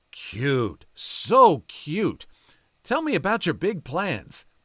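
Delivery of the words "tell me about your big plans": put-on bubbling-over excitement, quick, high and eager. Retelling a waiter's question to a group of preteens: imitating an excited waiter. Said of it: "He's foaming with excitement".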